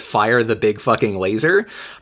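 plain

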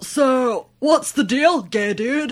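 very loud, very high, bright cartoonish voice. Asked by another speaker to redo a line, speaker does the Finding Nemo turtle voice. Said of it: "Can you say that like the turtle from Finding Nemo?".

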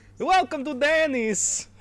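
very high, very loud, vague put-on Slavic accent. Imagining an unofficial Denny's in Cuba, say the welcome in a vaguely Slavic accent. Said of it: "It's vaguely Slavic".

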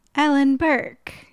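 squeaky, very high voice. Trying out saying own name aloud: much higher pitch than normal. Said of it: "ten octaves higher than your normal voice".

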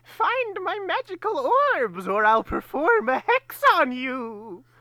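shrill, loud, high cackling witch voice. Speaker, after scolding a listener, speaks as the maze's witch: Gruntilda witch voice. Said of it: "Doing that voice".

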